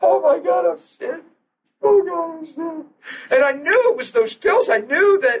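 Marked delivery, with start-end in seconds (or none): 0.0-2.9 play-acted weeping, words pushed out through sobs.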